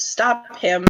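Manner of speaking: loud shouting, yelling. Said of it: "Lorelei is going to shout".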